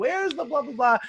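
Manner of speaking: put-on, very high shout, projected across a distance. Retelling someone calling a question from across the house: imitating someone shouting. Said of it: "Someone shouted from the other side".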